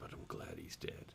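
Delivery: hushed, very soft, chilling whisper. Retelling a character's line from an episode: imitating a whisper. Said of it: "But then he just whispers".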